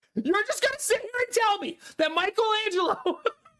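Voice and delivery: put-on, very high, outraged, overblown, irrationally mad screaming. Recalling a meme of a man irrationally mad about something: imitating irrationally mad screaming. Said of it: "irrationally mad about something and he's like screaming".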